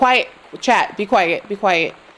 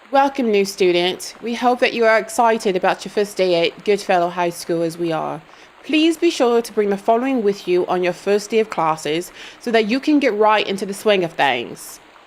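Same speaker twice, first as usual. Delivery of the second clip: put-on English accent; 2 semitones lower than usual. Reading a school welcome letter aloud to a new student, in an English accent. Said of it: "English accent time".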